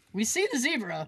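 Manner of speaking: ordinary talk, nothing marked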